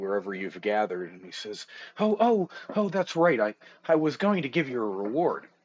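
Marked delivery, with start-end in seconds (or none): 2.0-5.4 eager, excited character voice, higher. Voicing an NPC running over to the party: excited NPC. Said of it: "he runs over all excitedly to the party".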